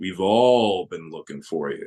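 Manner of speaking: unnaturally deep low voice. Telling a story, voicing the small boy: voice too deep and low for a child. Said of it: "a voice that's too deep and low for any child".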